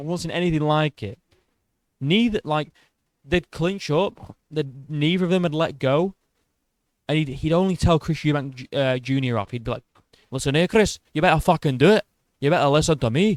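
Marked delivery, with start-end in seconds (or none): 10.3-13.4 put-on Scottish accent, scolding dressing-down. Retelling how a Scottish man told Chris Eubank Junior off, imitating a Scottish accent. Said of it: "He was Scottish".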